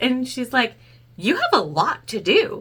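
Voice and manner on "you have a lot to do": very serious, slow delivery. Retelling Mom's blunt remark about the work left: imitating Mom, dead serious. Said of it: "Dead, dead serious".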